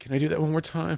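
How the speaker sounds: tearful pleading. Retelling what he asked with tears in his eyes: imitating a tearful plea. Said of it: "his tears are in his eyes".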